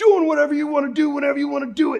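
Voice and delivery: very loud, very high, shrill drill sergeant bellow. Retelling a brother jumping around a corner to startle people, drill sergeant voice. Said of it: "he worked on the drill sergeant's voice".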